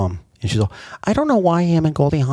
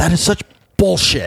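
heartfelt, emphatic, higher pitch; 7 semitones higher than usual. Imitating a favorite actor's way of saying a word: Kurt Russell saying bullshit with feeling. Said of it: "he just says it with so much feeling".

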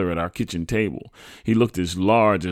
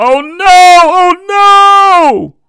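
piercing, shrill, very loud, slow drawn-out scream; 17 dB louder than usual. A mother reacts to her child's news, screaming. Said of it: "my mother started screaming".

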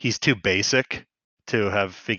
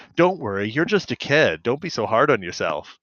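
ordinary talk, nothing marked

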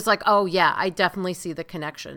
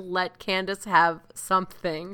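ordinary talk

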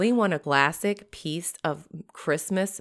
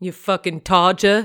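loud, fake put-on English accent; 3 semitones higher, 8 dB louder than usual. Reading Urban Dictionary entries aloud to another speaker, in a fake English accent. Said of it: "That's Bas- my English accent".

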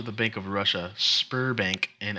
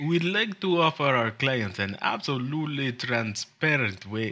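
put-on Russian accent; 4 semitones higher than usual. Reading a bank's pitch aloud during an accent debate: put-on Russian accent. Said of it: "your previous accent is now more Russian sounding".

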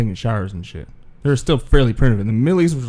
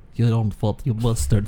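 fake, stronger Russian accent; 2 semitones lower, 4 dB quieter than usual. Repeating the line when another speaker asks to hear it again: put-on accent, more Russian. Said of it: "Can I hear it again?".

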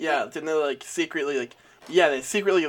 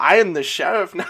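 loud, clumsy, heavy, bad German accent; 3 semitones higher, 7 dB louder than usual. Imagining a german sheriff in a frontier town: bad german accent. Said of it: "I can't do a good German accent".

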